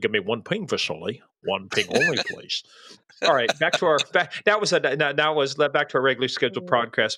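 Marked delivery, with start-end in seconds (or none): 0.0-2.6 deep, low classic movie-star voice, wide pitch swings. Quoting a movie line after another impression: Sean Connery impression. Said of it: "or that or Sean Connery".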